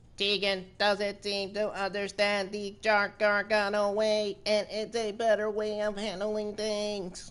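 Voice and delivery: very high, flat, slow robot voice. Imagining how Candice LeRae would talk if she were a robot: Candice LeRae as a robot. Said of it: "it would probably be like this if Candice LeRae was talking like a robot".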